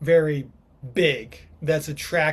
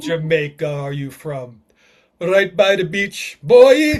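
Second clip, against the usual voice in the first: very loud, fake put-on Jamaican accent; 8 dB louder than usual. After being told to do it in a jamaican accent: put-on jamaican accent. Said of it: "You should have done that in a Jamaican accent".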